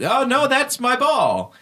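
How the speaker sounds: high slow clown wail.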